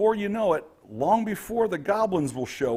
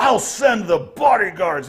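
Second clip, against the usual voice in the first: loud shouted yelling; 4 semitones higher, 8 dB louder than usual. Voicing the boss who yells down the chamber: boss yelling. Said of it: "walk across this chamber and yell down the way".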